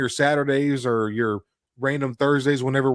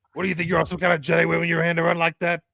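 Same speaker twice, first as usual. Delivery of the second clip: pitched-up, money-grubbing alien voice; 5 semitones higher than usual. Retrying after a flub, doing a Watto impression. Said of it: "Here's a Watto impression".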